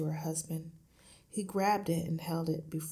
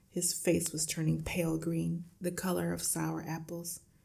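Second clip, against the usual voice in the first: plain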